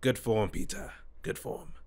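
slow, drawn-out, breathy character voice. Quoting a movie line for others to guess: Dustin Hoffman as Hook impression. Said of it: "That was a good Dustin impression".

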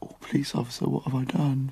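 put-on girlish whisper. Playing the girl to a pretend police officer: whispering as the girl. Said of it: "I wanna be the girl".

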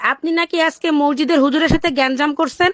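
high, put-on woman voice.

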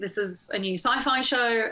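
ordinary delivery

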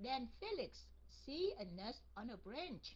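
lively, sing-song, rising-and-falling intonation. Teacher showing how to read an English sentence with rising and falling intonation. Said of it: "Mình phải đọc lên xuống chút xíu. Thí dụ nói".

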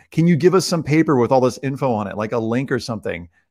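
usual speaking voice

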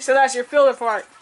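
ordinary delivery

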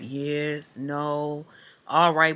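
low, flat, dead-level monotone, very slow words. Telling friends how the boy at their table talked to them, flat monotone delivery. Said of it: "he talking all flat".

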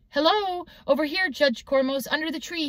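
very high, loud, calling-out shout. A man calls out to an arriving buggy at dusk, shouting. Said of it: "he shouted".

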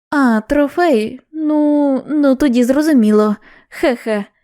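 laughing nervously, uneasy chuckle. A man answers a curt reply about another man's sword with a nervous laugh. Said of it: "Маклен нервово засміявся".

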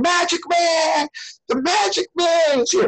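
very high screaming cheer, drawn-out hooting holler. Retelling how a group greeted the speaker each night: imitating guys screaming and hollering. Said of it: "a group of them would start screaming, hooting, and hollering".

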